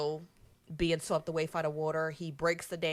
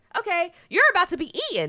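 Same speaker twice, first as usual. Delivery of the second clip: very high, very loud, shrill, gleeful delight; 14 semitones higher, 8 dB louder than usual. Retelling a movie scene, quoting a cub's warning: imitating pure joy.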